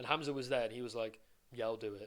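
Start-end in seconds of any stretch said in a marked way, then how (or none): 1.5-2.1 put-on stoic, unconvinced voice, pitched lower. Retelling how Hamza agreed to a cold plunge: imitating Hamza's stoic, half-hearted agreement. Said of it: "he sort of said it in, like, a kind of very, like, cor-, kind of stoic way".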